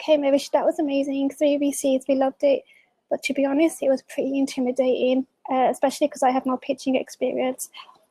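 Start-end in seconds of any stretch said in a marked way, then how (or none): none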